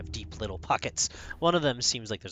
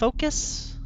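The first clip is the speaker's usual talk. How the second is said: very high, loud, baffled and puzzled; 7 dB louder than usual. Voicing a character who tilts their head at a question: confused. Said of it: "Like, confusedly".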